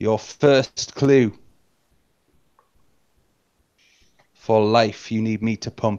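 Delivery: grand, ominous, proclaiming voice. Game narrator voicing a mysterious voice that gives the players their first clue, booming. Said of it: "The voice booms once more".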